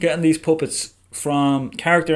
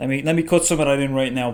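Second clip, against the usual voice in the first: ordinary delivery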